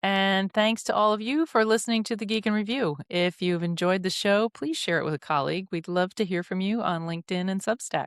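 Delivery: smooth, polished radio announcer voice, high pitched. Closing out the show and thanking listeners, in a radio announcer voice. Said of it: "Marlene goes into a radio voice".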